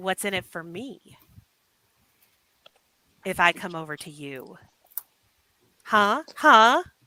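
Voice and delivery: strange creature voice. Voicing an invisible creature that flaps its wings nearby: invisible winged creature voice. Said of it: "a creature says".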